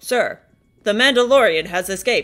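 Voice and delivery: stiff, mechanical, machine-like robotic voice. An officer reports to his superior in a show scene, robotic voice. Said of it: "why did that guy talk like a robot?".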